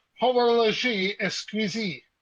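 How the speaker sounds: slow, careful French pronunciation of horloge exquisite. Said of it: "by the French phrase".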